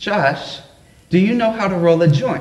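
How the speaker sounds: put-on sweet, small, little Southern accent voice. Retelling what his grandma asked him, in Grandma Phyllis's sweet Southern voice. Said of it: "says in her sweet little Southern Baptist voice".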